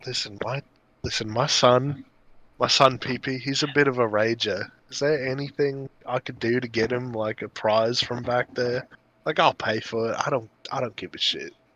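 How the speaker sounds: confidential, soft, hushed stage half-whisper. Playing a character who beckons the bartender back: half-whispering. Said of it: "whisper to her".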